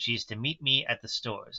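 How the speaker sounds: ordinary delivery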